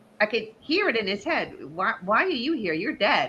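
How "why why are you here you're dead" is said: mock all mixed up, puzzled, bewildered tone. Retelling the father's words on meeting a dead relative: imitating dad sounding confused. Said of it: "all confused, going".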